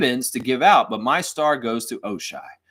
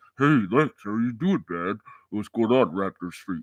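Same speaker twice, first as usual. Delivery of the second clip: disguised, distorted, voice-changer altered voice; 3 semitones lower than usual. Imagining a viewer talking with his identity hidden: distorted voice imitating Nameless. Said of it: "one of those distorted voices, like he's in witness protection".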